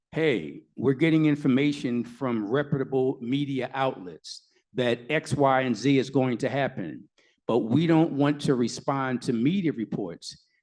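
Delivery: normal talking voice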